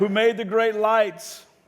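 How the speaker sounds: loud, high, slow, emphatic proclamation. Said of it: "You gotta say it like you mean it".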